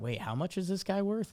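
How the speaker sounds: soft, hesitant delivery, acted. Speaker imitates newer beat reporters talking with Hal, imitating hesitant reporters. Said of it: "you hear the little bit of hesitation in their voice".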